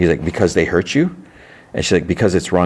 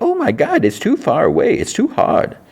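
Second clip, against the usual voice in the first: very slow, very high sing-song mocking mimic voice. Speaker retelling how a man answered in a mimic voice. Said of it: "in a mimic voice".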